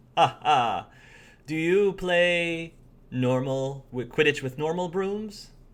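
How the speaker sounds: laughing a little through it. Voicing a character who flies beside a shaky player: laughing a little while talking. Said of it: "He laughs a little bit".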